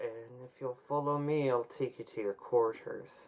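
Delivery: slow, words pushed through clenched teeth. A game master voices a character addressing the players, through gritted teeth. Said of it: "through gritted teeth".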